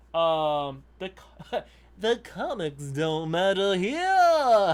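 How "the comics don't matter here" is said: sneering, drawn-out mocking ha-ha-ha cackle. A reader recalls how a comics line sounded in their head: put-on cackling voice. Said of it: "it was like in that ha ha ha ha voice".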